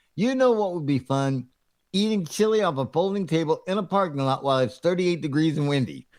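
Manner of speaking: usual speaking voice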